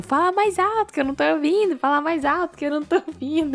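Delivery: put-on shout, pitched high. Recapping an episode, a character on the other side who can't hear, retelling a shout. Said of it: "ele ficava gritando".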